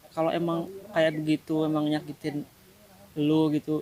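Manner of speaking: ordinary talk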